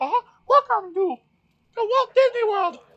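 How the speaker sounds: squeaked out high and loud. Describing a pre-recorded restaurant announcement, the speaker does a Mickey Mouse voice. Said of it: "It was like Mickey Mouse going".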